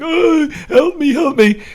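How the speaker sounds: very high, drawn-out crying, pleading voice. Imagining a patient in pain with broken limbs, imitating someone crying for help. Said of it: "you're crying like".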